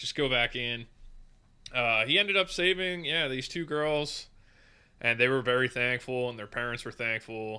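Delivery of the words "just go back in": ordinary delivery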